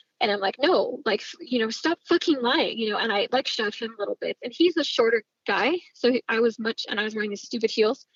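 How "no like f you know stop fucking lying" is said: nasty, harsh put-on voice. Retelling shoving a friend she thought was lying, imitating her own harsh tone. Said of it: "I'm being very bitchy".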